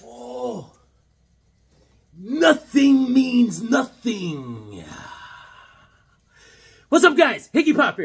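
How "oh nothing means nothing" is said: put-on gravelly wrestler promo voice, higher. Opening a video as Bonesaw fighting Spider-Man: Macho Man Randy Savage impression. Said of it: "my impression of, uh, the Macho Man Randy Sa-".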